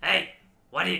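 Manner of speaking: strange, high, loud little alien voice. Retelling what a woman said thirty years later: E.T. voice. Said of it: "She's got the same voice as E T".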